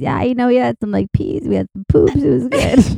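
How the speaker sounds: put-on stoned, high-sounding voice. Retelling what a babysitting friend said on returning: imitating someone high. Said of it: "She was so high".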